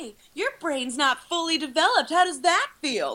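put-on high, patronizing, condescending kids' show host voice. Acting out a host who talks down to kids: mock condescending host voice. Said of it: "super condescending to the kids the whole time".

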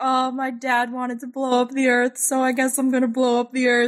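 flat, droning robot voice, sounding distressed. Recapping an episode, the speaker voices the robot: imitating a distressed robot. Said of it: "the robot is so distressed".

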